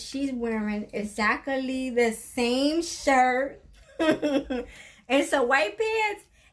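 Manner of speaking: slow, high-pitched, laughing through the words.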